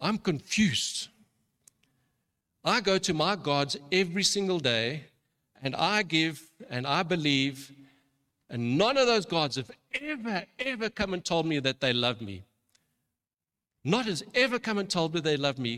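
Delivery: put-on broken English spoken in an Indian accent. Speaker retells a man's reply to hearing that Jesus loves him, in a put-on Indian accent. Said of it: "in his broken English and his Indian accent".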